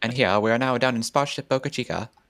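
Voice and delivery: put-on transatlantic voice. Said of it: "Yeah, exactly. That sort of thing".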